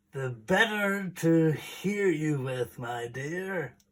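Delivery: croaking wolf voice. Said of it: "croaked the wolf".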